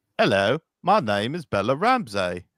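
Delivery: put-on English accent. Trying the impression again in an English voice: Bella Ramsey in an England voice. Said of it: "transfer that into an England voice".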